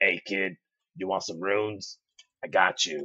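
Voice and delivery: gravelly, low, quiet voice. Showing the listener how a trench-coat rune dealer should sound: old-school raspy voice. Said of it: "old school raspy voice".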